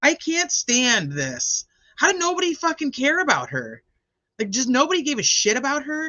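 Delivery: loud, shrill, swooping, pissed-off angry outburst. Talking to listeners after a trial about nobody caring, loud and angry. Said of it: "I'm probably getting loud".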